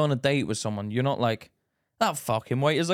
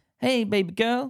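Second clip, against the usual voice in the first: fake-nice, creepy, sleazy sweet talk, pitched up; 8 semitones higher than usual. Mocking how a creep talks when trying to be nice: imitating a creep acting nice. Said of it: "the way you act when you're trying to be nice".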